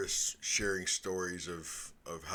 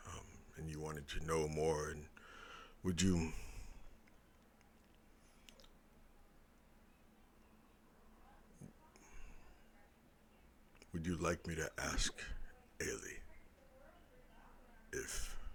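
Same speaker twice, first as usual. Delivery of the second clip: character whisper, quieter; 2 semitones lower, 7 dB quieter than usual. Voicing a character who leans in close to Nova: whispering in character. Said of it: "he's gonna whisper".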